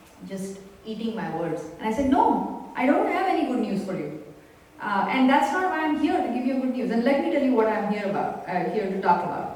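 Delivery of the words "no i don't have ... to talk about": usual speaking voice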